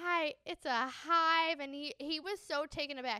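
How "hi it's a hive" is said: mock tearful, loud, very slow and drawn-out delivery. Retelling a girl's reply to a rude question: imitating someone tearing up. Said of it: "she immediately starts tearing up".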